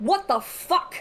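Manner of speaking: shocked, sudden, high startled cry. As the narrator describes a faceless figure peering at them, a listener is yelling. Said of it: "why are you yelling?".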